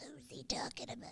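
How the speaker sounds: breathy, hushed, whispery troll voice. A co-host repeats a question about whom the other host means, in a troll voice. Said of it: "Or should I do it in my troll voice?".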